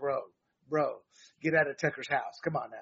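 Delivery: mock sarcastic, biting delivery. Speaker acts out his own reaction to a man he often disagrees with: mock-sarcastic retort. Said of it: "I'm being sarcastic there".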